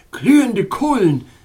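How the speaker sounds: loud, high called-out cry. Narrator reads the king taking the narrator's hand, crying out. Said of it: "rief seine frigide Majestät".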